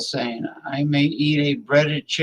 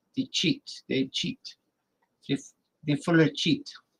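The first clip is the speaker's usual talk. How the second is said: breathy, half-whispered put-on Spanish accent; 6 dB quieter than usual. Joking about saying a swear word: put-on spanish accent. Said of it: "a Spanish accent for shit".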